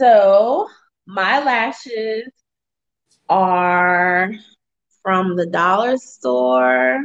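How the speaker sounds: very slow, stretched-out, drawn-out words. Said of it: "I love the way you say it slow every time".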